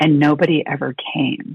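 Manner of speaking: stopped-short, still, understated delivery. Retelling a teacher's words on a task force call: imitating a very quiet voice. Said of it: "in this very quiet voice".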